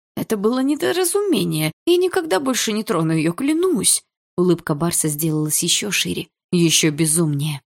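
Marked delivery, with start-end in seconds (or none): 0.2-4.1 terrified, stammering, high, swooping frightened babble. Facing a grinning, enraged man, he babbles his plea. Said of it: "пролепетал Есин".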